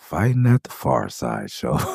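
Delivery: put-on deeply disappointed, let-down tone, swooping sing-song. Retelling what a band member said when a fight started: imitating disappointed remark.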